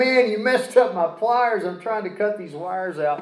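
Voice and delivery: play-acted, high-pitched screaming, yelling rant. Retelling what a buddy said while helping: imitating someone screaming. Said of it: "he's screaming like".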